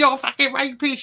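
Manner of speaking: mock yelling, screamed. Recounting a man's accusation on a live stream: imitating someone screaming. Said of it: "him screaming at me, going".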